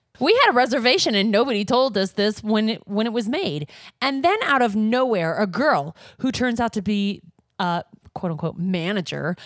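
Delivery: normal talking voice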